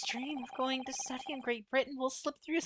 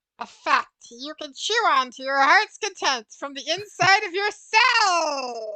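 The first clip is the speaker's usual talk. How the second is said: very loud booming cartoon voice, "cell" drawn out; 2 semitones higher, 13 dB louder than usual. Reading a game line after being asked to try a SpongeBob voice.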